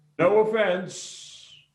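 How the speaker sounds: very high yell. Saying the line again after being asked to yell it: yelling. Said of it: "I wanna get you to yell it".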